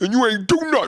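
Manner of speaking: bad put-on voice, very high and squeaky. Doing a self-described terrible impression: Tracy Morgan impression. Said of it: "that's a terrible Tracy Morgan".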